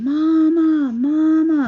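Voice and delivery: put-on high, loud, drawn-out child's scream. Telling how a child in the shower called out, imitating a child screaming. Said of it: "she starts screaming".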